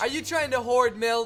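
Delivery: put-on passive-aggressive voice. Imitating a store employee about milk already at home: imitating a passive-aggressive store employee. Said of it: "The sheer passive-aggressive in this Walmart employee's voice".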